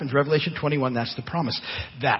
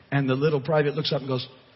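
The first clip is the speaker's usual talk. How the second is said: normal talking voice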